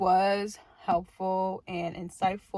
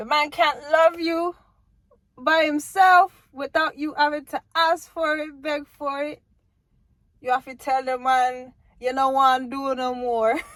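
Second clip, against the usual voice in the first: laid-on fake Jamaican accent, raised and high; 6 semitones higher, 7 dB louder than usual. Advising women about men who won't love them, in a fake jamaican accent. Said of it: "My fake Jamaican accent".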